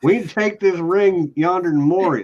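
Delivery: loud, high-pitched Texas-accented dwarf voice. Joking about dwarves having Texas accents, Texas-accented dwarf voice. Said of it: "my dwarves have Texas accents".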